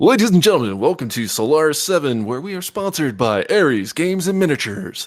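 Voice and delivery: announcer-style delivery. Opening a grudge match on the mic, Solaris announcer voice. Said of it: "the Solaris announcer voice going".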